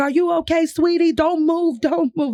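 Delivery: put-on thick Brooklyn Italian accent. Retelling a man checking on them after they woke on the floor: thick brooklyn italian accent. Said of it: "Like super thick Italian, Brooklyn Italian accent".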